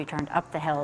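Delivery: ordinary delivery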